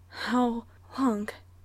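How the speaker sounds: breathless, out of breath. [name] asks Phil a question while they kiss: breathless.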